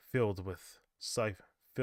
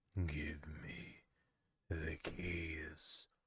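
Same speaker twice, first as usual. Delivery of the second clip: very soft, low, hushed, grunting guttural beast growl; 5 semitones lower, 9 dB quieter than usual. Reading a story where the beast demands the keys from the narrator, in a guttural grunting beast voice. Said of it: "It demanded in a gruntled in a grunteral's tone".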